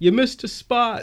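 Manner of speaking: high-pitched mocking shout. The speaker recalls what people shout out at them, retelling a shouted remark. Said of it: "people shout out like".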